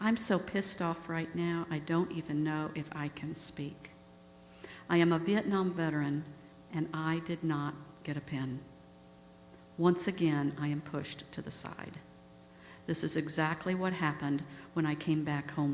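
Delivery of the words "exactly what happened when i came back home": ordinary talk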